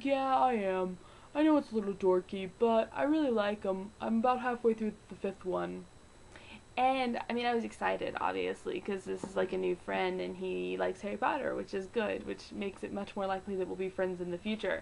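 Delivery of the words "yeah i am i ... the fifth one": put-on stock boy voice. Retelling what a new friend said about reading Harry Potter, in a boy voice. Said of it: "That's the voice I use for all boys".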